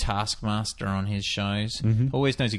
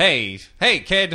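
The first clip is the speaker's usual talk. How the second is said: put-on Boston accent, much higher, louder; 8 semitones higher, 7 dB louder than usual. Showing the boston accent used for a character, put-on boston accent. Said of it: "I used a Boston".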